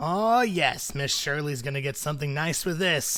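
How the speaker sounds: heavy smoker's voice. Voicing a halfling barmaid pocketing a tip: halfling barmaid, heavy smoker's voice. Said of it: "she definitely sounds like she smokes a pack of cigarettes a day".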